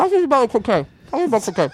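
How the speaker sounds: mumbled through a mouthful while chewing. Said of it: "your chewing is driving me nuts".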